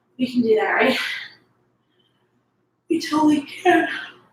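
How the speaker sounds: speaking through a yawn. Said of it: "I'm sorry, I'm yawning".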